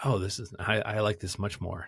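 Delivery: plain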